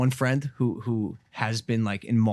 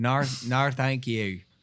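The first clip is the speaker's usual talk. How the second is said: put-on Australian accent; 2 semitones higher than usual. Showing another speaker an australian accent after being told to go on. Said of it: "It's not that bad".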